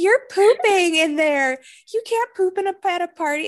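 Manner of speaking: high-pitched screaming, scolding tone. Retelling a party scene where a girl yells through the door: imitating Maddie screaming. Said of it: "She starts screaming".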